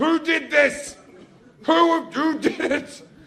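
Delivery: mock furious voice, high-pitched and slow. Retelling the mum coming home to a puddle: imitating a furious mum. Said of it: "she's fucking furious".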